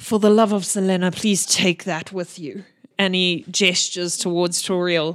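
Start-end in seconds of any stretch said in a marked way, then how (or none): 0.0-2.6 hushed whisper. Narrating the captain as he whispers to Darby: whispering. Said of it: "he whispers to you".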